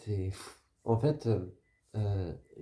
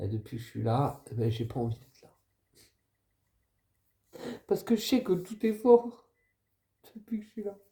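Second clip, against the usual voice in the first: tearful, close to crying; 4 semitones higher than usual. Speaking of not wanting to be here on Earth, about to cry. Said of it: "je vais pleurer".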